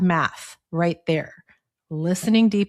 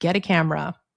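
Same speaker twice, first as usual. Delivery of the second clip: put-on soft, little whisper. Retelling a little inner voice that told her what to do: imitating a little whisper. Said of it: "there was a little whisper that said".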